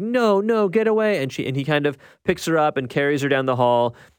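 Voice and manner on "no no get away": put-on high, very slow, stretched-out screaming. Speaker retells a woman screaming when her father comes in, retold screaming. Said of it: "she starts screaming like".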